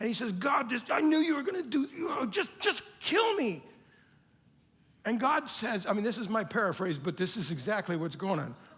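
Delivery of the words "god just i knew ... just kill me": put-on angry voice, higher and louder. Paraphrasing Jonah's complaint to God after Nineveh is spared: imitating angry Jonah. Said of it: "And he's so mad".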